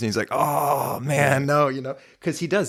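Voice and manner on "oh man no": put-on disappointed, upset, let-down protesting tone. Retelling a movie scene, imitating upset Peter Pan. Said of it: "he gets upset".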